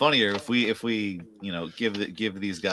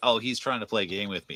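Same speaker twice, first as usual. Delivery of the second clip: plain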